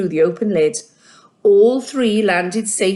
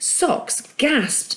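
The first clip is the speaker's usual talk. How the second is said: ordinary delivery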